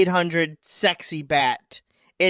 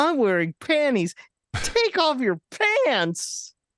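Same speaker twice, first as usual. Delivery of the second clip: gleeful, delighted, high, swooping happy shout; 7 semitones higher, 4 dB quieter than usual. Retelling what a man shouted, imitating him sounding happy. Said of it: "he sounded so happy about it".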